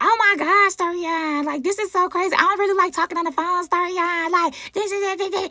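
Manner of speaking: high, exact-sounding woman's voice. Retelling a phone call, the speaker imitates the woman's voice exactly. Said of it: "That's her voice, like literally".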